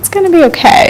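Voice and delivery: high, soothing, reassuring tone. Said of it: "trying to calm me down".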